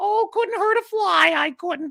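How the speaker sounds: very high, small, harmless-sounding mocking voice. Speaker confronts Grace about insulting fans, mocking Grace's little high voice. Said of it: "your little high pitched voice".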